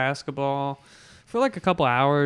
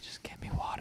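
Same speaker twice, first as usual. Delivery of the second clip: barely voiced, faint, breathy, pained whisper. Retelling asking for water after rolling an ankle: imitating own past whisper. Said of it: "whispering because I couldn't speak".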